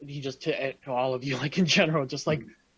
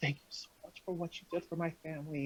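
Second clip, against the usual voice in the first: close, soft, hushed, barely audible half-whisper; 3 semitones higher, 10 dB quieter than usual. Voicing a character thanking someone during a hug: half-whispering. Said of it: "you hear her whispering".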